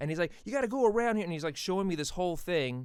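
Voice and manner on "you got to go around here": raised, high-pitched, talking-down condescending yell. Retelling how a man yelled directions around the cones, retelling a yell. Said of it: "he's yelling at me".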